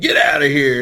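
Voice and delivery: clumsy, badly done put-on wrestling commentator voice. Mocking an announcer's old commentary: Vince McMahon voice. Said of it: "he would do it with that voice".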